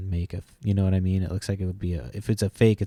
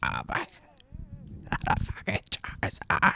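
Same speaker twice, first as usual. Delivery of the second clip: breathy, strained cry on the breath; 5 dB quieter than usual. Retelling pulling a Charizard from a pack: Robert F. Kennedy voice. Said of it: "I sounded like Robert F. Kennedy".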